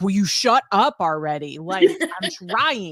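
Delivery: mock irritated, exasperated, annoyed and fed-up tone. Retelling another speaker snapping at a car alarm: imitating someone annoyed. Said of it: "And you were just like".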